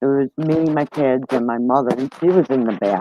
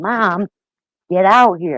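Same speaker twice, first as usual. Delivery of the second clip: urgent screaming yell; 6 semitones higher than usual. Retelling calling her mom out of the house during an emergency; retelling a scream. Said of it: "And I'm screaming".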